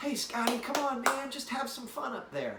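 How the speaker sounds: high, upbeat, encouraging cheering tone. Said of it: "would tell me".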